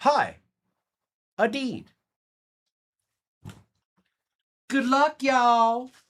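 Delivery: high, very slow, stretched-out delivery. Greeting a viewer while opening cards: Kimberly impression. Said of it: "that was my Kimberly impression".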